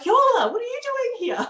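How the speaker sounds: put-on very high, loud yell. Retelling a friend calling out from a car window: imitating someone screaming. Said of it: "he screams out".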